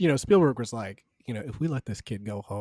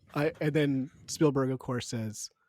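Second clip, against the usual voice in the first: normal talking voice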